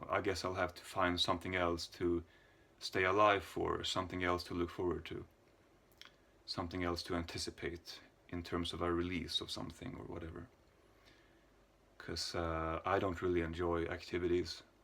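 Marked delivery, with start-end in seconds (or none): none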